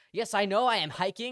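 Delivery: high, loud, rude, snapping voice.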